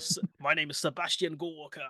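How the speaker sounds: deep, proper British voice. Friends discuss a man's deep British voice; one introduces himself as him: deep British Sebastian Gorka impression. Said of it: "his voice is really deep".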